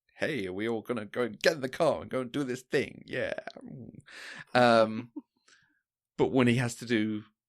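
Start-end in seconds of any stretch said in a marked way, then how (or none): 0.2-3.0 put-on mid-Atlantic American accent. Imitating how he plays the brave, take-charge stuff, faux transatlantic american accent. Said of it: "He kind of puts on a faux American accent, something a bit transatlantic".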